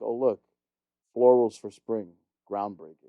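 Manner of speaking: dry, faintly sarcastic tone. Quoting the editor in chief from a movie, in a put-on sarcastic tone. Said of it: "in a sarcastic ass tone".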